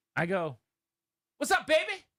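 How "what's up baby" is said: acted, very high, teasing and playful tone. Re-enacting own greeting to a player, exact tone: imitating own past greeting. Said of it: "in this exact tone".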